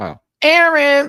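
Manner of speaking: shrill, very high, loud shouted yell. Calling out to a viewer all the way out in Vegas, yelling. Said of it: "I'm sorry, Aaron, I yelled".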